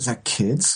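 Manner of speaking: hushed, soft whisper. Retelling a question whispered to Lisa during the recording: imitating a whisper. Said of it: "you kind of whisper to Lisa".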